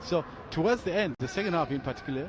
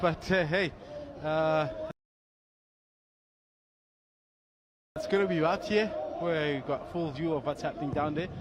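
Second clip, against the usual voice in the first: breathless, out-of-breath panting, pitched higher; 4 semitones higher than usual. Just climbed up from the side of the pitch and asked your view, out of breath, panting. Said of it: "I'm still trying to catch my breath".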